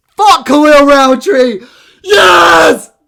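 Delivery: very high, very loud shrill scream, yes stretched. Reacting to a fight he predicted wrong, screaming. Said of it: "so I need to stop screaming".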